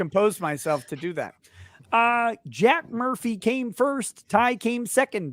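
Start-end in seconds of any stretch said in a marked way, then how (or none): 2.5-5.3 raised, pitched-up puppet voice. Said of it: "I have to do it in Kermit voice".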